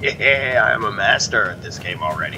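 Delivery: dry, sarcastic, boastful, clearly not meaning it. A streamer comments on his own play, sarcastic. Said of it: "he says sarcastically".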